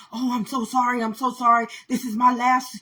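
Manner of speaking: very loud, high-pitched, hysterical pleading tone. Retelling how a driver apologized after backing into the car: imitating a hysterical man. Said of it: "he's all hysterical".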